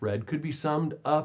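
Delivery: ordinary delivery, nothing marked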